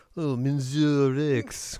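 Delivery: very thick put-on French accent. Joking that a game character sounds French: very French accent. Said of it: "Sounds like he's just very French".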